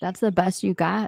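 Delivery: laughing while speaking. Retelling a woman antagonizing Paloma after a put-down: imitating someone laughing. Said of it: "laughing like".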